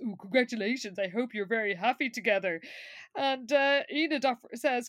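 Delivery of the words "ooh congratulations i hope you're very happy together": snide, snarky, sarcastic tone. Retelling a character's reply in a show: imitating a snarky retort. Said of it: "still very snarky and unlike himself and says".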